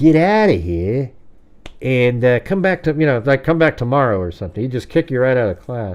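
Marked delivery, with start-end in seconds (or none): 0.0-1.1 slow, tough-guy gangster voice. Retelling how he spoke when kicking someone out of class, in a gangster guy voice. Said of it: "He'd talk like this gangster guy".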